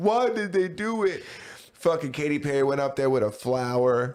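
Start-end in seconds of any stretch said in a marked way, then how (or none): 0.0-1.2 high-pitched outcry. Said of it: "then we all would have been like".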